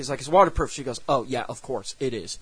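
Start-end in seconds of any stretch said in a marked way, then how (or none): 1.1-2.4 mock patronizing, low, soft, talking-down condescending tone. Describing a deleted movie scene, acting out a character's reply, retelling a condescending reply.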